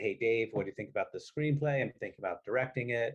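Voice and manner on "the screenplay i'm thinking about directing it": ordinary talk, nothing marked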